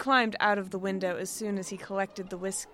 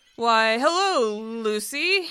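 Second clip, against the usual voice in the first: surprised, taken aback, raised pitch; 3 semitones higher, 8 dB louder than usual. A man, confronted by a woman about his guests, greets her, surprised. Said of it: "he said, surprised".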